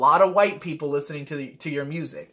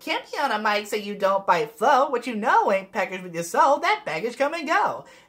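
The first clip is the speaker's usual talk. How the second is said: sassy tone with attitude, pitched up; 6 semitones higher than usual. An artist shows how a verse finally came out on recording, sassy tone. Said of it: "I went for more of like a sassy tone".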